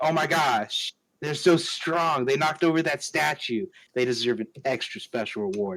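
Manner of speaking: normal talking voice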